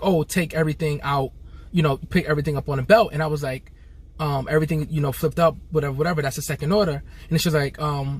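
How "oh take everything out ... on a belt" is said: ordinary delivery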